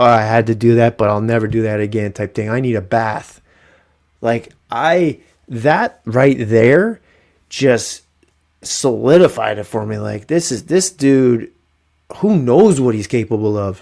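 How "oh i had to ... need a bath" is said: ordinary delivery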